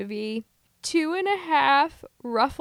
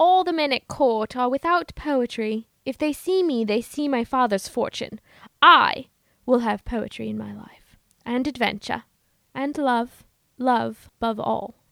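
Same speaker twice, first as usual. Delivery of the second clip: put-on English accent with dramatic reading style. In a dramatic reading of a period film scene, playing Viola in an English accent. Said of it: "our lovely English accents".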